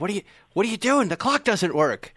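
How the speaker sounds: put-on high-pitched yelling and screaming outburst. Retelling someone screaming at the restorer: imitating someone screaming. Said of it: "he starts screaming at him".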